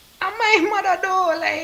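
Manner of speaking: put-on high pleading child's voice.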